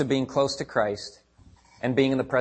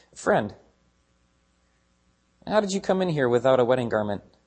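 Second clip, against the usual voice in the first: mock-casual, offhand, put-on nonchalant tone. Explaining a parable, voicing the host's question to the guest, acting out a nonchalant question. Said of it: "just nonchalantly goes".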